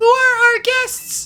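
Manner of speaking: very light, put-on voice. Trying out a voice for a character, a really light voice. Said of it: "a really, really light voice".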